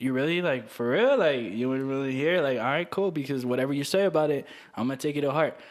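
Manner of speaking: ordinary delivery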